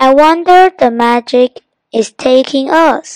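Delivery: plain reading voice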